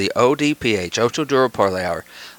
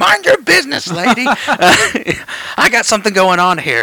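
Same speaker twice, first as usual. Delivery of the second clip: very high, stretched-out, drawn-out holler; 11 semitones higher, 4 dB louder than usual. Retelling shouting at a lady in a car at a red light, retelling a shout. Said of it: "and I'm shouting".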